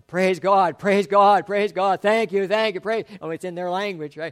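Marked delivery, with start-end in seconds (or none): 0.1-3.0 all-out, loud, powerful, emotional shouting. Describing worshippers shouting thanks to God in their language, imitating their loud shouting. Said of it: "Just shouting".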